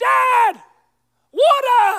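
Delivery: put-on child screaming, high and loud.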